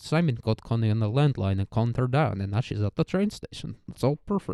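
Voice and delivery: put-on Swedish accent. Retelling what a random villager chimed in with, in a swedish accent. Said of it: "he's got like a Swedish accent".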